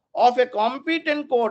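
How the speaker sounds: competent court emphasized. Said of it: "underline the word competent court".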